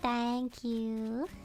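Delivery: thank you said with southern American twang. Thanking someone and slipping into a southern twang for no reason. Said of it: "I don't know why I said it with a, a southern twang".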